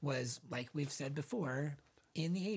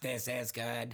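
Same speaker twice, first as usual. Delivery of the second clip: put-on robot voice, old commercial style; 3 semitones lower than usual. Recalling a wacky 80s soda ad with a floating robot: robot voice. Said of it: "like a robot voice that came in".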